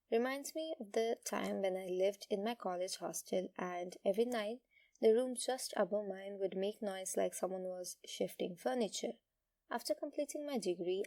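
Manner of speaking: normal talking voice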